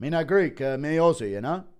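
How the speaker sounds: slurred, dopey put-on voice, words mushed together. Discussing who would be champ, doing an impression: Volk impression. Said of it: "Impression of C T E Volk saying".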